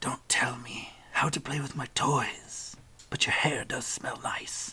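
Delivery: breathy, close-up whisper close to the ear. A narrator voices an unseen woman behind a player, whispering in your ear. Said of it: "a whisper in your ear from behind".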